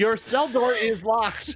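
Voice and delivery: smug, high, slow, gloating voice.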